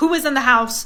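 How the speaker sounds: ordinary delivery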